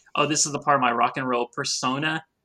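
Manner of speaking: plain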